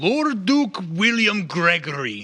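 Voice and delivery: big, loud, booming voice, drawn out. A character lifts his glass and calls out: loud, booming voice. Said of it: "he just gets this loud, booming voice".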